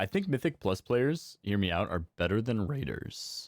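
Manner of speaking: cracking, breaking voice. Player chatting with a PvP player about game modes, voice cracking. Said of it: "my voice cracked".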